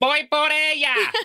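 put-on, very high, shrill, full-throated top-of-lungs yell. Retelling a movie scene where a girl runs off: yelling at the top of her lungs. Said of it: "at the top of her lungs".

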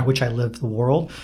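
ordinary talk, nothing marked

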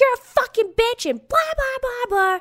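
acted-out, very high, shrieking scream. Retelling screaming back and forth in an Uber: imitating screaming an insult. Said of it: "We're screaming".

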